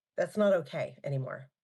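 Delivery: normal talking voice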